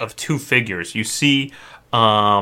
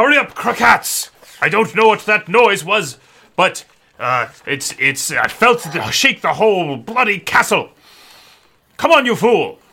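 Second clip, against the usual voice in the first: shouting, much higher; 9 semitones higher than usual. A game narrator voices a man at the top of the stairs, shouting. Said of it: "he shouts".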